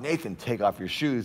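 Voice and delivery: mock yelling, shouted loudly. Retelling how mom called up the stairs about shoes: imitating mom yelling. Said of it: "And my mom yelled".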